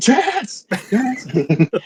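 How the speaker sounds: very high, swooping, pained shriek. A player whose character is held fast and in pain, screaming a name. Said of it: "I just scream".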